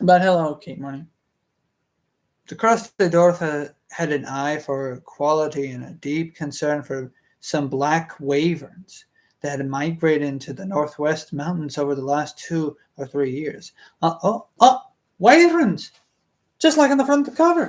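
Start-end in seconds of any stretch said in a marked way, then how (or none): 14.0-17.7 high-pitched, squeaky, loud, excited outburst. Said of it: "Why am I speaking like this?".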